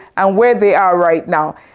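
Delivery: ordinary talk, nothing marked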